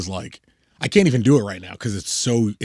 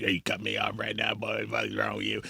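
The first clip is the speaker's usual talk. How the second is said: put-on old bayou man voice, quieter; 12 dB quieter than usual. Describing a friend's sudden voice shift, imitating an old bayou man.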